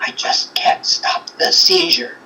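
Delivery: hollow, whispery voice, soft and breathy. Retelling a voice heard on a recording: imitating a hollow whispery voice. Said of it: "like a whisperiness, but like, it was like a hollow".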